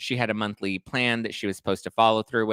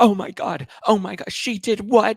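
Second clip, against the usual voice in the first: put-on very high, drawn-out, frantic disbelief; 11 semitones higher, 6 dB louder than usual. Retelling how Heather reacted in the finale: imitating Heather freaking out. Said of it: "freaking out".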